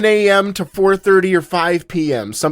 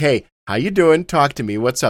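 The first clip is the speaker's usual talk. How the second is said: usual speaking voice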